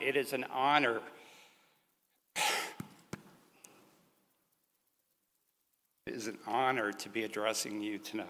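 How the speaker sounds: hushed, very soft, a little emotional. Opening a graduation speech to graduates, faculty and families, a little emotional. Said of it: "a little emotional".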